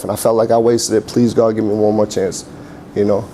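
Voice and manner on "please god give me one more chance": ordinary talk, nothing marked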